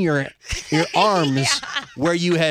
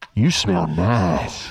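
very low, creepy voice with nice drawn out; 11 semitones lower than usual. A speaker mimics how another speaker said it to a woman: mock-creepy Darth Vader voice. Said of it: "Why am I Darth Vader?".

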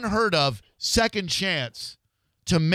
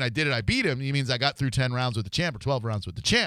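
normal talking voice

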